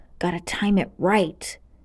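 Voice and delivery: mumbled, muttered under breath. Reading a story, a character times his run past wizards: muttering to himself. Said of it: "muttered to himself".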